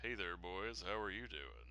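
very soft, hushed, fake seductive, sultry voice. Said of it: "it's so sexy. It's impossibly sexy".

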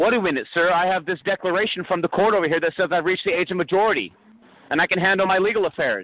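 high, eager, excited, worked-up speech. Speaker explaining legal competency to listeners; getting excited. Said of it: "I'm sorry. I'm getting excited".

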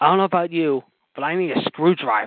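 put-on broken English. Retelling a wrestler's request for a drink: imitating broken english. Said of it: "in his broken English".

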